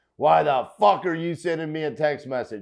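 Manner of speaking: mock furious, indignant old lady outburst voice. Retelling angry replies to cold texts: imitating an angry old woman. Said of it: "all of them were old and angry like that".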